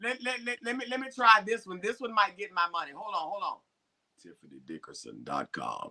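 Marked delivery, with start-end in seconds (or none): 4.2-5.9 very low, deep voice. Trying out a voice to get booking money: very low voice.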